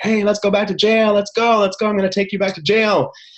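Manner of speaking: high-pitched, loud shouting.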